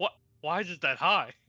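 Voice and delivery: put-on surprised reaction. Retelling own reaction to a high dice roll: imitating own surprised reaction. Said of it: "you sounded surprised".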